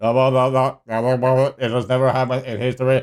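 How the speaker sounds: very deep, slow, drawn-out machine voice. Comparing a human speaker with an ai voiceover, imitating an ai voice. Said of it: "when the A I started talking, it was like".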